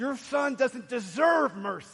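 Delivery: slow, loud, angry words through gritted teeth. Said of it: "in his anger, through gritted teeth".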